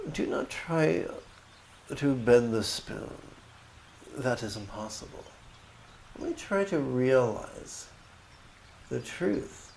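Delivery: delightful put-on English accent. Quoting a little boy from a movie: imitating an english accent. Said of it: "the little boy with a delightful English accent says".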